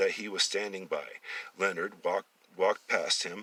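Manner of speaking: plain reading voice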